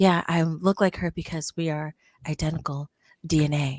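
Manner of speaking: put-on flat monotone voice. Describing a show character's delivery, the speaker mimics her: imitating a flat monotone voice. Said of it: "she just talks like this".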